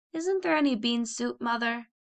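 with a sigh. A sick girl answers her mother's offer of turkey broth, sighing. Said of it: "Caddie sighed".

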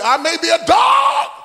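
bold, loud, high-pitched shout.

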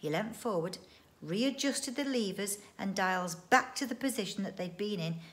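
plain

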